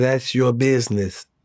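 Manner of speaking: just talking in a normal voice. Imitating Russell telling the daughter something: imitating Russell. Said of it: "I can hear Russell saying".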